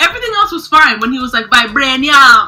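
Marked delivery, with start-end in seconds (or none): 1.5-2.5 put-on Jamaican-sounding accent, louder. Describing how T'Challa said one word: T'Challa's Jamaican-sounding vibranium. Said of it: "a certain way he would say vibranium that sounded Jamaican".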